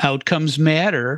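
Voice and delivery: slow, drawn-out mocking tone.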